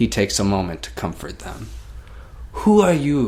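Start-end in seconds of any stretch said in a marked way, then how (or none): 2.5-3.3 bad fake French accent, loud and high. Narrating a scene, voicing a man questioning the visitors: bad french accent. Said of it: "My French accent sucks".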